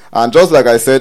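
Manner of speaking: ordinary talk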